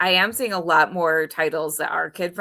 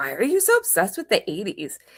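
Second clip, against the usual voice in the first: put-on mean-girl voice; 2 semitones higher than usual. Retelling how someone asked a question: Regina George voice. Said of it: "in her Regina George voice".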